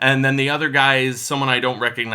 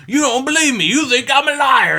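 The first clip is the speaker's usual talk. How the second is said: agitated, heated, very high-pitched, raised outburst; 12 semitones higher, 6 dB louder than usual. Retelling a man confronting Cuba Gooding about a varsity jacket: retelling a heated outburst. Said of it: "he starts getting all heated".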